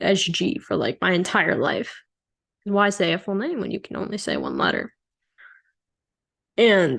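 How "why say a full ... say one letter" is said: ordinary delivery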